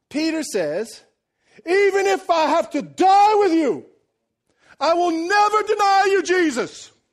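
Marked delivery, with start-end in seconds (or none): 1.6-6.8 very loud, slow, bold, booming delivery. Retelling a bold declaration in a Gladiator-style setting: bold declaring Peter impression. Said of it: "I'm gonna do it in my best impression".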